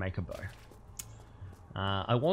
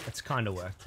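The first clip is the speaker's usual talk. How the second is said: kinda stressed, softer overall delivery. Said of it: "Emphasis on kinda".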